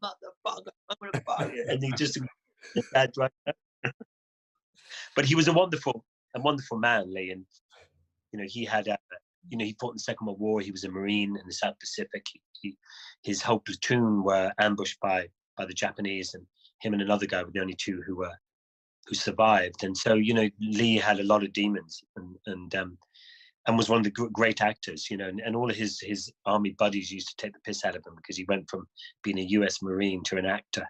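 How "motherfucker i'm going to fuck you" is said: put-on high, drunk-sounding shouting. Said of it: "he's shouting obscenities".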